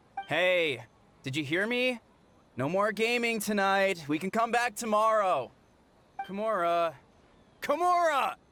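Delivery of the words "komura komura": high, yelled shout. Calling for Komura, who isn't answering, yelling a name. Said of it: "What's with the yelling?".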